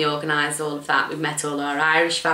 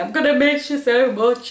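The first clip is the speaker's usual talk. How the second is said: play-acted sobbing, high, loud and tearful; 9 semitones higher, 6 dB louder than usual. Retelling bursting into tears with her mum: imitating herself crying. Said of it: "I just burst into tears again".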